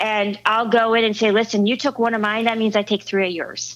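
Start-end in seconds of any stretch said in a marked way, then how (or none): none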